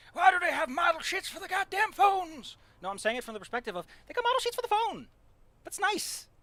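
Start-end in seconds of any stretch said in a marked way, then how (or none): 0.1-2.5 put-on old-man yell, pitched high. Joking about phones having model sheets, imitating an old man yelling. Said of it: "yelling like an old man would".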